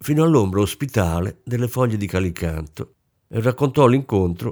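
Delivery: ordinary delivery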